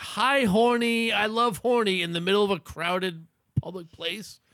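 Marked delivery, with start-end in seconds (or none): 0.0-2.0 put-on high, drawn-out little-girl yell. Retelling two five-year-old girls yelling in a crowded public place, imitating little girls yelling. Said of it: "2 5-year-old girls yelling".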